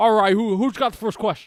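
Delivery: very loud, high-pitched, booming delivery.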